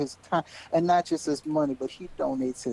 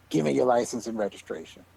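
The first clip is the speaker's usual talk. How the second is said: play-acted ugly, nasty, hostile tone; 4 semitones lower than usual. Retelling a traffic stop, quoting the police officer: imitating a nasty tone. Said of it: "with the nastiest tone ever".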